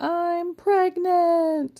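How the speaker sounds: play-acted sudden scream, very high in pitch. Retelling a child suddenly yelling during a school play: imitating a scream. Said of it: "started screaming".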